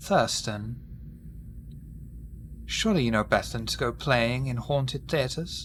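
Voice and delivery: soft whisper close at the ear. A voice whispers in a player character's ear as he leaves: Clara's whisper. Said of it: "you hear a voice whisper in your ear".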